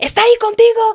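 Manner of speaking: furious yelling, pitched very high, livid. Retelling a phone call where a livid woman started shouting, imitating someone yelling. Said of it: "And she was yelling at me".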